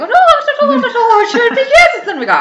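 hammed-up Irish lilt, very high, loud, sing-song. Joking about sounding more Irish on Paddy's Day: exaggerated Irish accent. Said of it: "I'm not gonna Irish up my accent".

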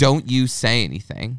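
put-on aggressive voice. Retelling a woman at a bar who grabbed the speaker's throat jokingly: imitating an aggressive warning. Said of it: "but it got a little aggressive".

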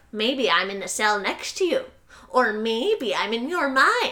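mock sly, scheming, sneaky-sounding man's voice. Retelling what a man says to the prisoner he calls Bob, imitating a sneaky-sounding man. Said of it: "the man is very, like, sneaky sounding".

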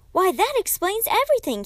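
very high-pitched exclamation of overwhelming relief. Hearing the girl's real age, she answers with great relief. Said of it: "Kate said with a feeling of great relief".

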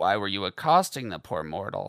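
growling. Narrator reads Baxter questioning another character; growled. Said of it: "Baxter growled".

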